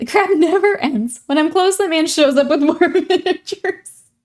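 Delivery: talking through laughter. Reading out a viewer's message about painting armies, laughing while talking. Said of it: "I'm laughing 'cause that's how my armies are too".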